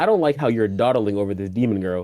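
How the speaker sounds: usual speaking voice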